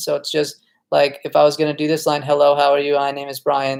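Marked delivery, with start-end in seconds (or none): 2.2-3.8 robot-like monotone with zero inflection. Demonstrating how to memorize a line like a robot, with flat robotic delivery. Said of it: "memorize with total no voice inflection".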